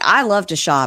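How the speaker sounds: ordinary talk, nothing marked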